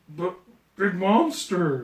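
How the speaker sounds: animated character voice, pitch swooping around. Retelling a movie scene: imitating Hulk. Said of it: "And he goes".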